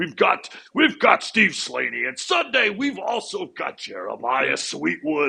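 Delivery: monster truck show announcer voice. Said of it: "Macho Man Randy Savage voice".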